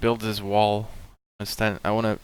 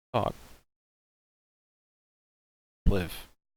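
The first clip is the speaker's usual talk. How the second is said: terse, menacing, spoken close in the ear. Holding a captured man and threatening him: whispering in his ear. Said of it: "I like to whisper in his ear".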